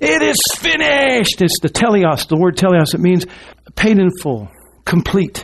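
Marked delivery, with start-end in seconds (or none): 0.0-1.4 put-on loud cry in a very high voice. Retelling the crucifixion, quoting the cry from the cross: a loud cry. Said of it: "cried out with a loud voice".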